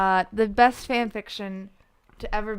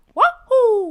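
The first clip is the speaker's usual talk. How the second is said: put-on cry, higher and louder; 11 semitones higher, 6 dB louder than usual. Asked by the others to do it, imitating the wahoo. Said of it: "I just got the wahoo down".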